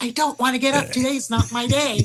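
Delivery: stubborn, complaining, yelled refusal. Retelling refusing to get up for the therapist: imitating own yelling. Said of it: "I'm yelling at the therapist".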